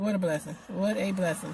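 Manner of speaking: ordinary talk, nothing marked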